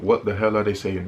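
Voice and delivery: plain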